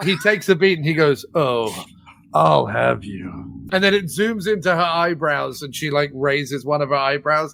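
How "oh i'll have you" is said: low, slow, sleazy seductive voice. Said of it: "absolutely fantastically sleazy scene".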